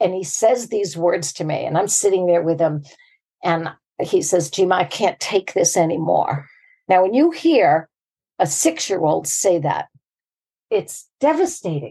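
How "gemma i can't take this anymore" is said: put-on weeping child voice. Retelling what a six-year-old said while weeping, imitating a weeping child. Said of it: "He's just weeping".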